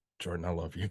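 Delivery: mock whisper. Retelling words said to a friend during a hug: retelling a whisper. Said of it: "I whispered to him".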